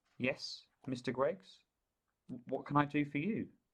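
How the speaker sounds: overly courteous, extra polite, most polite voice. Narrator reads Mum answering Mister Greggs: her most polite voice. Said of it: "in her most polite voice".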